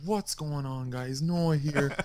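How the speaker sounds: slow, late-night video commentary voice. Retelling own commentaries recorded at two a m: imitating own quiet late-night commentary. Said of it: "I would record them at, like, two A M and be like".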